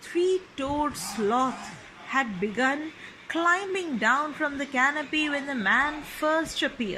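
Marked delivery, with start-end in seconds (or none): none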